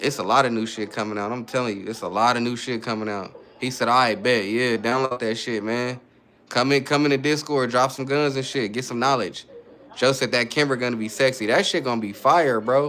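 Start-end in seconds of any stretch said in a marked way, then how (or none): none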